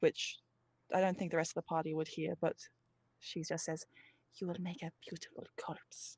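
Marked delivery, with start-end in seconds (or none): 4.4-6.2 soft, menacing, leaned-in threatening whisper. Voicing a character leaning in over a defeated foe: whispered menacing line. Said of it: "leans in to whisper something".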